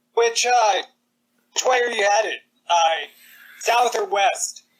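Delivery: high-pitched calling-out voice. Calling out in character to ask which way the others are headed: yelling. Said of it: "stop yelling".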